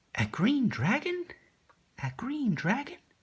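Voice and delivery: put-on very high, swooping girl voice. Demonstrating voices for practice reading aloud, in a girl's voice. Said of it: "My girl's voice is obviously not very good".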